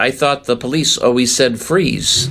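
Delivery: ordinary delivery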